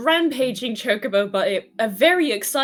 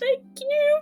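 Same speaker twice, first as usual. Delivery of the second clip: very high, squeaky, cracking, breaking voice. Describing a woman's reply to them, imitating her squeaky breaking voice. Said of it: "her voice is like very like squeaky breaking".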